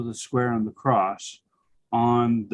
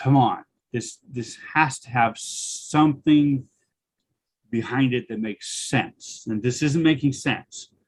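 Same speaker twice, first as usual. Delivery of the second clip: usual speaking voice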